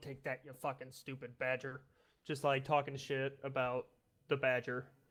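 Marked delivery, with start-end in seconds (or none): 0.0-1.8 muttering under breath, much quieter. Retelling what you said to the badger while Indy could hear, muttering under breath. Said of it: "under my breath going".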